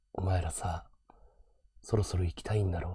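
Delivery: very quiet, hushed, murmured heartthrob voice. Mimicking how ikebo streamers talk: very quiet voice. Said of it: "イケボ配信者ってすっごい小さい声で喋るの。".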